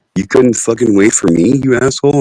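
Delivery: put-on cat voice in pure disgust. Voicing the cat who walks in after the smoking: voicing a disgusted cat. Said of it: "look at me in pure disgust".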